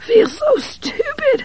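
put-on very high, soft, breathless wheeze. Reading fiction aloud, voicing a character's line; wheezing. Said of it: "he wheezed".

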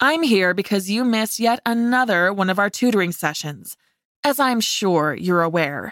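ordinary talk

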